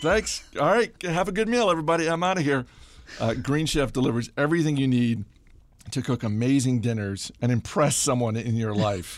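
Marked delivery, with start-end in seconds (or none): 0.0-2.6 high, loud, exasperated voice. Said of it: "Just like".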